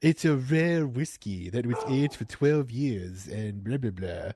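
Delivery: put-on posh cartoon baby voice. Mocking another speaker's description of a whiskey: Stewie impression. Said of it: "Stewie impression".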